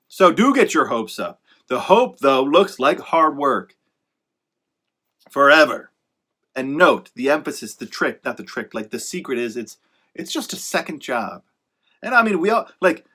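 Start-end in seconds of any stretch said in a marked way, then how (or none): 9.5-11.4 pointedly, deliberately sarcastic tone. Speaker talking about the realities of being an author, sarcastic. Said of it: "I say that kind of sarcastically on purpose".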